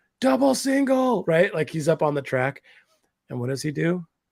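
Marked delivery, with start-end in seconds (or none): 0.2-1.2 very high, loud, shouted yelling. Retelling yelling an instruction to a driver on the track: imitating own past yelling. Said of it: "and I'm yelling. I'm like".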